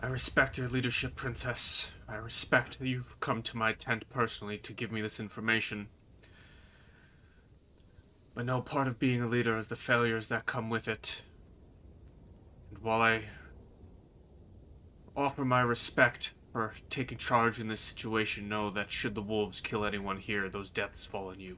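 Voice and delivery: grave, earnest, weighty, very serious soft tone. A game master's character addressing the princess in his tent, in a very serious tone. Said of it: "he says very in a very serious tone".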